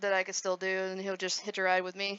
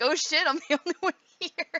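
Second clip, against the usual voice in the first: sudden alarmed blurt, raised and pitched up, scared; 8 semitones higher, 6 dB louder than usual. Retelling being alone at stream start: retelling own scared reaction. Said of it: "I was getting scared".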